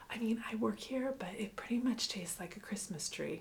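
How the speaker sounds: hushed, low-volume speech. Retelling what a Starbucks worker answered about a drink's taste, the speaker is retelling in a quiet voice. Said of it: "in a quiet voice".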